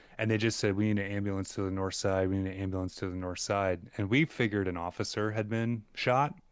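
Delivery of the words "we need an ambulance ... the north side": usual speaking voice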